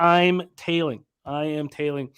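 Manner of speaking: usual speaking voice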